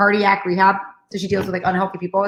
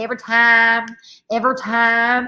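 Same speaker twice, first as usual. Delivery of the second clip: slow, drawled country accent; 3 semitones higher than usual. Explaining a note where every was written as ever, in a country accent. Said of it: "as if you got a country accent, you're like".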